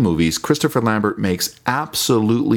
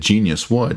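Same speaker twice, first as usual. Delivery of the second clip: plain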